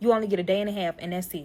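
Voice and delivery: put-on aggressive tone. Retelling what he said about resting only briefly: imitating someone speaking aggressively. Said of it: "got aggressive as fuck when he said".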